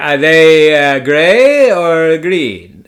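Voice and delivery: put-on slow European-accented speech. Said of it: "it sounded kinda like that".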